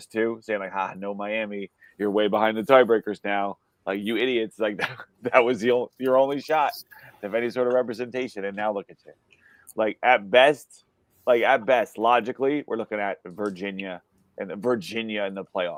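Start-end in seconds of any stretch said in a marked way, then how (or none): none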